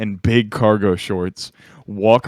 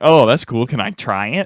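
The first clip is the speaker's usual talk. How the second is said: put-on nerdy voice with a lisp; 2 semitones higher than usual. Speaker quotes a guy she offered candy to, in a nerdy lisp. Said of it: "he had like a nerd lisp".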